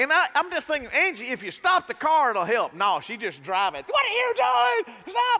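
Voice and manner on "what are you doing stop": shrill, piercing, very high shrieking scream. Retelling the driver screaming at him as he vomits out the window, imitating someone screaming. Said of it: "So she's screaming at me".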